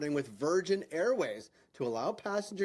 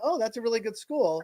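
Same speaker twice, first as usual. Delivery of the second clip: put-on high, taken-aback, caught-off-guard surprised exclamation; 5 semitones higher, 6 dB louder than usual. Retelling how people react on hearing the school: imitating a surprised reaction. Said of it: "when they act surprised".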